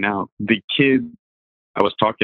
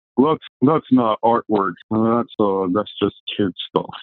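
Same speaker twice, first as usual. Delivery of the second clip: put-on pretentious, snobby voice, slower. Speaker mocks people who dismiss comic book art, in a mock-pretentious voice. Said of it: "That's my pretentious voice that I'm using right now".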